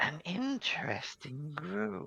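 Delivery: faint, high, hushed half-whisper, very close. Narrating a voice that only one player hears in their ear: half-whispering. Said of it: "voice in your ear whisper".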